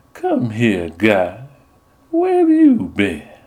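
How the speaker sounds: smooth, silky, sugary, sweet sing-song voice. Reading a story aloud, the narrator voices a woman's line: silky, sweet voice. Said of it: "with a silky, sweet voice".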